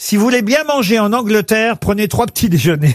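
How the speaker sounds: ordinary talk, nothing marked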